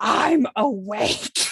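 growling voice. Retelling grabbing the nurse and pulling her down: retold growl. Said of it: "I just growled out".

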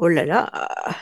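long, exaggerated, over-the-top oh la la, syllables stretched. Mocking a speech stereotype: drawn-out, over-the-top 'oh la la'. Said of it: "The syllables are not long and drawn out, like, oh la la, and the tone is not over the top, like I just did".

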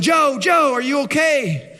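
high, drawn-out calling yell. Retelling a story of climbers calling to a fallen friend: imitating friends yelling. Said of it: "the guys start yelling".

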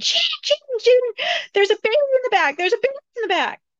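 shrill, high-pitched, repeated screaming. Retelling a dream, calling out to the driver: retelling a scream. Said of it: "And I'm screaming".

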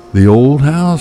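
out of breath. Narrating a story in the pitch dark, a woman answers the narrator: panting. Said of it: "she panted".

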